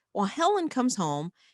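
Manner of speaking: ordinary talk, nothing marked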